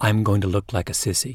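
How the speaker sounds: ordinary talk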